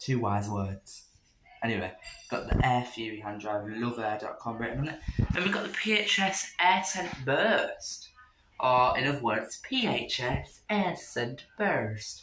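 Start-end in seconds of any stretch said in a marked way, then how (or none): 9.7-12.2 refined, upper-crust posh pronunciation, nice posh voice. Speaker repeats a product name in a posh voice. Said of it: "It's just a nice posh voice".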